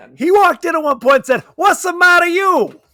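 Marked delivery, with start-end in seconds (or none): 1.6-2.7 put-on high-pitched, heavily caricatured Italian accent. Retelling a film character's line: imitating Adrien Brody's mock Italian accent. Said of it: "a borderline offensive Italian caricature".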